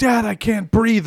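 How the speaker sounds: mock, high, frantic, panicked little child's scream. Retelling how a son ran in at night: imitating a screaming son. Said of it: "and then screams for six minutes".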